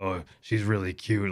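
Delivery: echoing, echoey voice. Retelling a tabletop game moment of reading a guard's thoughts, in an echoey inner-thought voice. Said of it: "like in an echoey voice".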